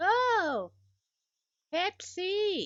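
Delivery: griping, very high, swooping complaint. Imitating viewers who complain about the lighting: imitating people complaining. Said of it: "'cause people complain".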